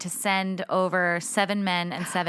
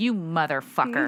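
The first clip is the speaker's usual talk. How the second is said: put-on furious god voice. Retelling a myth where Poseidon is enraged: imitating an enraged Poseidon. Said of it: "so Poseidon is enraged".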